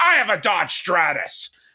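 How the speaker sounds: all-out high-pitched screaming, sketch-comedy style. Recalling a comedy sketch line, imitating Will Ferrell screaming. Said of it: "Will Ferrell on S N L just screaming".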